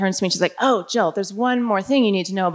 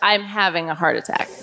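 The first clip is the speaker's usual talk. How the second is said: mock dead-serious, flat tone; 3 semitones lower than usual. Retelling what Jen said while grabbing the speaker's arm, imitating someone dead serious. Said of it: "And she's dead serious".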